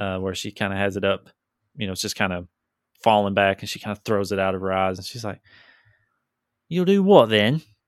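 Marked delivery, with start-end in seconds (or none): 6.7-7.6 put-on sudden switch into pitched-up Cockney accent. Playing a character who answers back, switching to a Cockney accent. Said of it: "her accent changed too? ... she went to Cockney".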